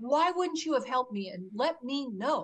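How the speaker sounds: acted screaming. Retelling screaming at a parent, finger shaking: retelling a scream. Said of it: "I was screaming at her".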